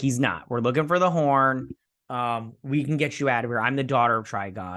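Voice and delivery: ordinary delivery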